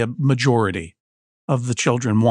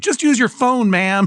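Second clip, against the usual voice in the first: very high-pitched yelling; 11 semitones higher, 3 dB louder than usual. Acting out sons impatiently instructing an old lady: imitating someone yelling. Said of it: "if they were yelling at her, like".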